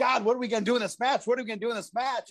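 put-on fast, nervous, rattled-off young-sounding delivery. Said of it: "I'm the nervous kid".

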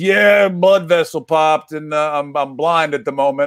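imitated Southern Bayou accent. Retelling how your dad explained going blind in one eye, use a put-on Southern Bayou accent. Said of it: "I don't know where the hell the accent comes from".

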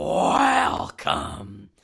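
forceful, deep voiceover delivery. Recapping a wrestling show opening, doing an aggressive Vince welcome. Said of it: "It opens with an aggressive".

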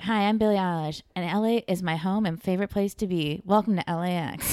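dead-level, uninflected monotone drone with no lift. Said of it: "it's just so like monotone".

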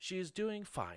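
quick, posh, upper-crust sing-song voice. Narrating a game, the speaker voices a weird scanning voice in a posh fancy voice. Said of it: "sound so fancy?".

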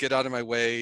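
ordinary talk

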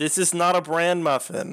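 emphatic near-shout. Repeating a line to another character who asked what: shouting. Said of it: "don't have to shout".

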